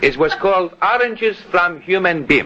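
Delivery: Greek dialect voice. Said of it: "that Greek dialect of yours".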